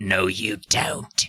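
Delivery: low, raspy, scruffy, rasping voice. Narrator reading a story where someone grabs a character from behind; scruffy raspy voice. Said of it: "Scruff, raspy voice says".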